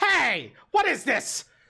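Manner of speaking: startled, caught-off-guard imp voice, high and loud. Voicing an imp who is startled by an attack: voicing an imp, startled. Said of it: "the imp turns and looks and goes".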